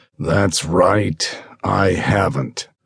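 expressionless, dull, flat, toneless voice. Reading a character's reply in a story: flat voice. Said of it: "DeLillo said in a flat voice".

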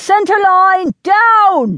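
very high roaring bellow, stretched downward. Narrating a battle, Gabriel orders his men: bellowing. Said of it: "he bellowed".

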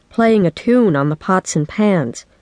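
plain reading voice

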